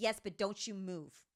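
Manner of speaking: mock fierce, very aggressive, forceful voice. Retelling how her mom answered a man who wanted to approach: mimicking mom's aggressive warning. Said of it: "like very aggressively".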